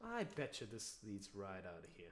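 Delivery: low, mock-sarcastic tone over every word. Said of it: "Can you see the sarcasm in that?".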